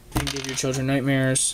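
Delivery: ordinary talk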